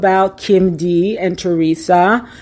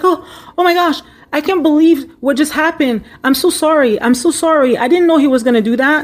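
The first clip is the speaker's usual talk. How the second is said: high, feigned innocent tone; 8 semitones higher than usual. Retelling how a woman came to the table and apologized, mock innocent apology. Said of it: "she's like playing it kind of like, I'm innocent".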